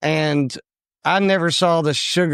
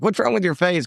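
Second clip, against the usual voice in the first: ordinary talk, nothing marked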